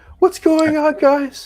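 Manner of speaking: high-pitched shriek. Narrating a tabletop fight as the creature screams in pain, Brittany shrieking. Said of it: "Brittany shrieks".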